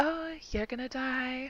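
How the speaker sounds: high, faint, ghostly half-whisper. Retelling spooking the boys while walking through them: half-whispering. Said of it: "just like whispering in the air".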